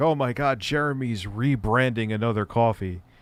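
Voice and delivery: ordinary talk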